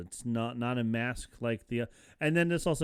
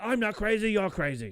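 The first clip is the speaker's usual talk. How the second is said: put-on, very high-pitched, furious outburst; 10 semitones higher, 4 dB louder than usual. Retelling what an angry patient shouted: imitating an angry patient. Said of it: "He got angry".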